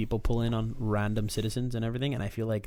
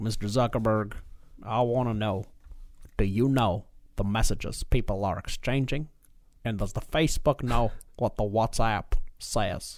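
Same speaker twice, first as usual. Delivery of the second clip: slow, put-on southern drawl with rising tone. Retelling a senator's question at a hearing: imitating a southern accent. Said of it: "some guy with, like, a, a southern accent".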